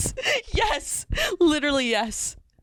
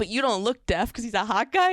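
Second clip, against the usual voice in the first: ordinary delivery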